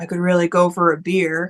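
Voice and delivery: put-on mutter under breath. Retelling what a guy at the desk said: imitating someone muttering under his breath. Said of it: "under his breath".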